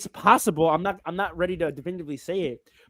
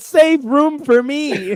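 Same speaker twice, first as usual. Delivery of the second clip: mock enthusiastic tone, higher and louder; 9 semitones higher, 7 dB louder than usual. Retelling what another speaker said, imitating someone saying it enthusiastically.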